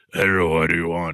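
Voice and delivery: put-on voice of the devil. Joking about conjuring the devil on Fridays: devil voice. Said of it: "that's my devil voice".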